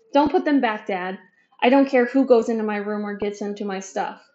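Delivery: ordinary delivery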